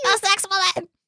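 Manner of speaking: very high voice pushed up toward falsetto. Trying to copy how Miles says a line: imitating Miles's rising high voice. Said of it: "his voice is just getting higher".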